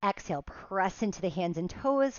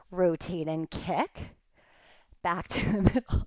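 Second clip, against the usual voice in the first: speech broken up by laughter. An instructor leading an exercise, laughing at how they look: laughing while talking. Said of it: "I'm laughing at how I look".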